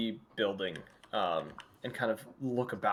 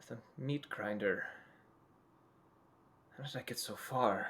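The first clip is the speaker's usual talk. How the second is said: slow mutter under the breath, words trailing off; 8 dB quieter than usual. Voicing a lost traveler just told where he is: muttering under his breath. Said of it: "muttering under his breath".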